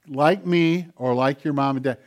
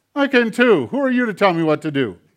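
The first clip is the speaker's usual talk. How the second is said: put-on nasty little puppet voice, much higher pitched; 6 semitones higher, 6 dB louder than usual. Performer voicing a hand that talks back to its owner: talking hand puppet voice. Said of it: "that nasty little hand talk back to me".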